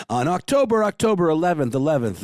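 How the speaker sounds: half-hearted monster truck announcer. Host announcing a book release date, in a monster truck announcer voice. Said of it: "as my monster truck announcer voice".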